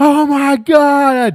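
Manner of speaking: piercing, very high, loud panicked scream, "God" drawn out. Retelling passengers on a shaking plane: imitating people screaming.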